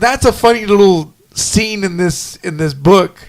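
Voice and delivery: ordinary delivery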